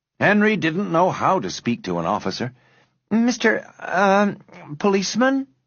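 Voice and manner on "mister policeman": careful, unsure, hesitant voice, a little high. Narrator reading a boy addressing a busy policeman, cautious. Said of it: "he said cautiously".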